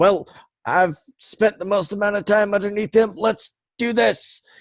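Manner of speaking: high, loud, dim-witted crewman voice.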